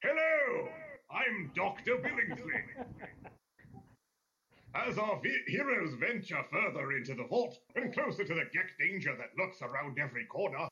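posh robot butler voice, high, swooping, sing-song. Speaker doing the final episode's intro by special request, Mr. Handy voice. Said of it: "do the intro in the voice of Mr. Handy".

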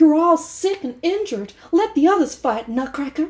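put-on Southern American accent. Retelling a ballet scene, voicing the doll Clara: Southern American accent. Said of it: "I'm gonna do a Southern, Southern American".

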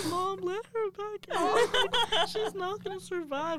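very high, slow, wailing, tearful sobbing, acted out. Retelling her little brother's pleas at the door, imitating a sobbing child. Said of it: "he was sobbing".

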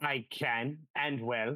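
put-on New Zealand accent. Retelling a scene where a character is asked if it can talk, New Zealand accent. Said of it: "and with a New Zealand accent".

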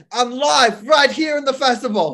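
high, loud mock Australian reporter voice.

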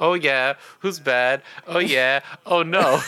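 bug alien character voice. Recalling another person's line, the speaker repeats it in a Stinkfly voice. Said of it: "in like a Stinkfly voice".

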